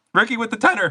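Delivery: voice cracking up high mid-phrase. Announcing someone by name: voice cracking. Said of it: "that voice crack was wild".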